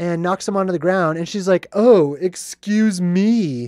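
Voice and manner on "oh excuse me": acted, obnoxious, jerkish, douchey-sounding female voice. Retelling a movie scene where a lady knocks someone down: imitating a douchey-sounding lady. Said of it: "all douchey sounding and stuff".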